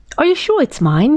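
high, squeaky, eager, excited voice. Narrator reads a small animal asking friends during a game, excited squeak. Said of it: "he squeaked excitedly".

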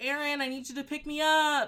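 mock high-pitched yelling. Retelling a phone call asking a brother for a pickup: imitating own past yelling. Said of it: "I start yelling that I'm intoxicated".

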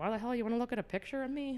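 put-on cranky, gruff, high-pitched old woman's complaining grumble. Retelling a grandmother seeing her blown-up photo: imitating grandmother's gruff complaint. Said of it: "she's like".

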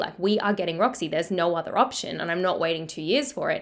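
ordinary talk

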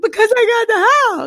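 sobbing through the words, very high-pitched. Retelling his own answer when asked why he was crying; put-on crying. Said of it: "why are you crying".

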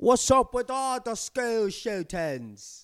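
put-on British accent, very high and drawn out. Imitating a British TikTok speaker: British accent impression. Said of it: "he's British".

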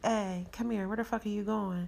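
usual speaking voice

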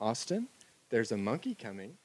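very soft, hushed, sweet little voice. In the hot tub, the speaker retells Amy calling from the balcony door, in Amy's sweet little soft voice. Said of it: "in Amy's sweet little soft voice".

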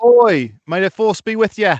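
very high put-on Cockney British accent. Joking about British Empire accents, quoting a famous movie line: put-on British accent. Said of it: "our great British accent work".

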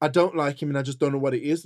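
ordinary talk

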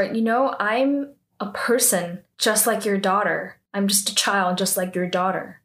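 ordinary talk

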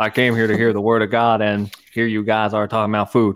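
badly done, horrible put-on voice, sounding bored. Imitating a listener who came to hear a sermon: horrible Landon impression. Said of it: "That's a horrible Landon impression".

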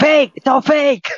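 loud scream. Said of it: "You're all screaming".

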